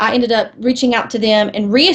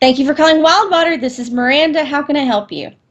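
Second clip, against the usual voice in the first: eager, enthusiastic, raised-pitch voice; 5 semitones higher than usual. Asked how to put enthusiasm into your voice, the speaker demonstrates an enthusiastic phone greeting. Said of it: "How do you sort of put enthusiasm into your voice?".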